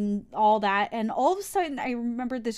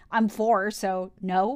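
usual speaking voice

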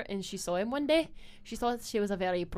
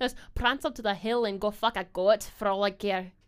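put-on Scottish accent; 5 dB louder than usual. Speaker shows how they talk after rehearsal line readings, Scottish accent. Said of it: "talk shit in a Scottish accent".

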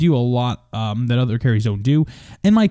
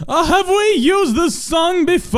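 put-on very high, slow, drawling old-man voice. Describing how Jake asks about songs, imitating Jake's old-man voice. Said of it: "He talks like an old man".

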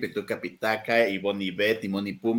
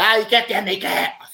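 put-on aggressive tv presenter voice, higher and louder; 11 semitones higher, 8 dB louder than usual. Mocking a TV presenter's on-air comment: imitating aggressive Laura G. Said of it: "ya es súper agresivo también".

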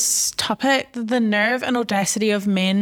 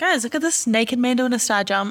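plain

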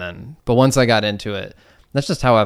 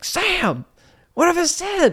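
very high, thick, drawn-out southern holler. Recalling their dad yelling up while they played piano, retelling dad's yell, thick southern accent. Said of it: "my dad would just yell up in a thick southern accent like".

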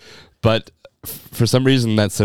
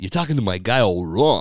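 put-on halting, hesitant actor voice. Doing impressions for the other speaker to guess: Christopher Walken impression. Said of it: "Christopher Walken".

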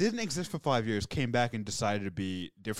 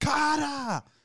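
high, rapid screaming; 3 dB louder than usual. Giving a one-word impression of the episode: Jackie Chan voice screaming. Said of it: "It's gonna be in Jackie Chan's voice".

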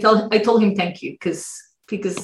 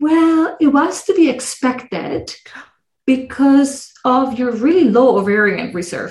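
slow, patronizing, condescending, fake-caring tone; 4 semitones higher than usual. Retelling how a man spoke to her, mocking a condescending caring voice. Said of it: "very, I care voice, but it was so condescending".

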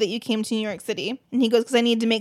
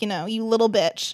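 ordinary delivery

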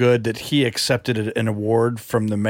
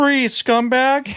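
very high, squeaky, cartoonish put-on voice; 13 semitones higher than usual. Doing an impression, asked for by another speaker, of a suit performer: imitating a high-pitched voice. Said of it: "do an impression of his voice".

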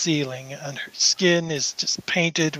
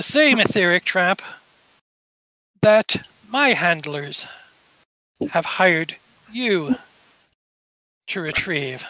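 put-on noblewoman character voice; 2 semitones higher than usual. Game master voicing Madame Lang greeting the players: voicing Madame Lang. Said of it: "And she says".

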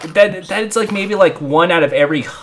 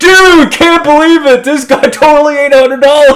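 very high, loud, blurted hyped bro voice. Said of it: "We bring in Jake Paul to the morgue".

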